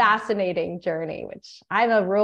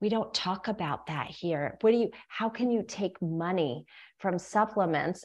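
soft, hushed half-whisper; 8 dB quieter than usual. Retelling what the woman next to them said when supplements came up, imitating half-whispering. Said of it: "she whispered".

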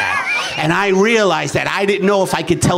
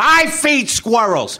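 fake furious, angry delivery; 4 semitones higher than usual. Showing a joke about feeding squirrels, said in a mock-angry voice. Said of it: "I do it in the angry voice".

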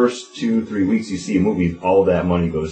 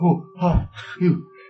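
put-on impression, pitched way up and goofy. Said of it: "You start talking like this".

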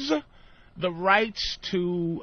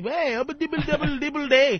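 mock Indian accent, higher pitched; 7 semitones higher than usual. Retelling doing jokes in front of rich people: hacky Indian accent bit. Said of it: "I'm doing the Indian, ah, hacky".

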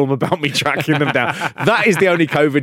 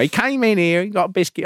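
terrible fake northeastern English accent; 4 semitones higher than usual. Quoting an old lady they showed, in a terrible northeastern accent. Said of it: "I did a terrible northeastern accent there".

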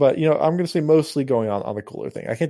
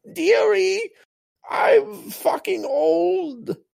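put-on very high, very slow, creaky croaking old crone voice. Joking about a crone who lives in the shed: old crone voice. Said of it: "My crone who lives in, in the back in the shed".

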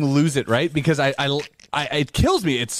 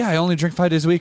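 usual speaking voice

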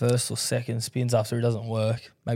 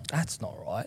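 much softer, muttered under the breath. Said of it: "I'm like".

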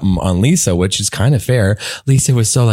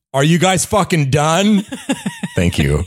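fed-up, exasperated, swooping put-on voice; 7 semitones higher than usual. Podcast host imitating listeners who don't watch Real Housewives, impression of PLT listeners. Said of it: "This is my impression of PLT listeners".

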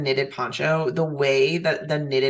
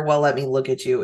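ordinary talk, nothing marked

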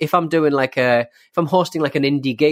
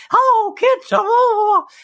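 high squeaky voice, stretched out long; 4 dB louder than usual. Imagining going up to the kids and greeting them, do a Mickey Mouse voice. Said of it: "doing like a Mickey voice".

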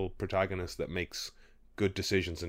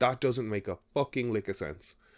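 play-acted, mild half-yelled voice; 3 semitones higher than usual. Retelling watching a show, imitating yelling at the television. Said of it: "I was yelling at the television going".

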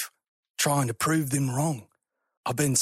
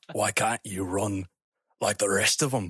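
deep, vaguely Scottish put-on accent, loosely done; 6 semitones lower than usual. Voicing a character's line, listeners hearing it as Scottish: Scottish-ish accent. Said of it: "It's like Scottish".

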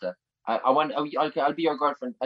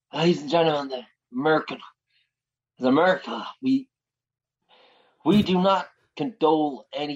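put-on old-fashioned American accent; 2 semitones higher than usual. Trying an impression after the other speaker's attempt: Joe Biden impression. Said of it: "Will I do it?".

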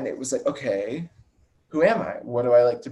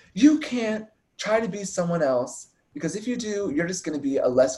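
mock yelling, high and raised; 7 semitones higher than usual. Speaker retells a woman yelling at them; retelling someone yelling. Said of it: "yelling at us".

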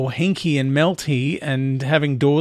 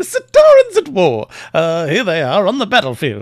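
put-on loud, swooping, old-time newsreel announcer voice; 4 semitones higher, 7 dB louder than usual. Video host introducing the Sontarans episode of Doctor Who, in a Movietone newsreader voice. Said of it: "I'm doing movie tone newsreader voice".

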